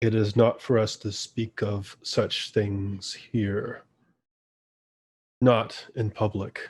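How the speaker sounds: hushed giant voice. The speaker voices the Stone Giant, who leans down to answer: voice lowered as much as possible. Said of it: "he lowers his voice as much as possible".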